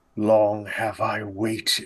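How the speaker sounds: growled out low, bitter and resentful anger. Voicing a creature stalking toward the party: bitter, angry growl like Gama. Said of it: "growls in a voice that sounds very much like Gama, but much more kind of bitter and angry".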